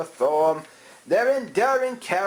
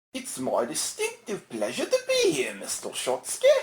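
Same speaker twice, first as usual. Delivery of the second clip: fake British accent, very breathy, all breath; 10 semitones higher, 5 dB quieter than usual. A talk-show guest answers the host's welcome: Andy Kaufman with fake British accent. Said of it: "why are you faking a British accent".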